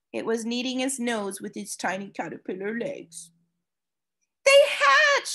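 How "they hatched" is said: loud, excited, very high-pitched cry. Spotting a tiny purring caterpillar, exclaiming to Mom. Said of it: "I exclaimed to my mom".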